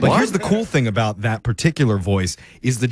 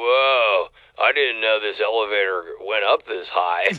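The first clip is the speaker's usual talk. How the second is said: put-on stoner voice with long drawn-out whoa; 2 semitones lower than usual. Presenting the last voice option, a Gen Z male, the speaker uses a stoner voice. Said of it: "That sounds like a stoner".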